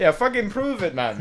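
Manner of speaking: thick put-on Irish accent. Imitating someone's dad denying there is proof, in a super thick accent. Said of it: "he's just got a super thick accent".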